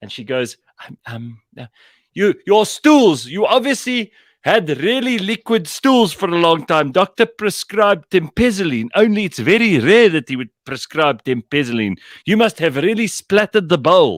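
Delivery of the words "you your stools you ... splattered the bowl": mock, very high, shrill, loud shouting. Retelling how a pharmacist announced a customer's details in the shop, imitating the pharmacist shouting. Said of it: "shouting all her personal information out".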